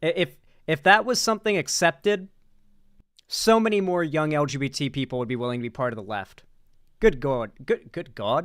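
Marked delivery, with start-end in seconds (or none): 7.0-8.5 slipped-in British accent, exclaimed. Exclaiming mid-discussion, slipping into a British accent. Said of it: "why did I say it like that? Like like British".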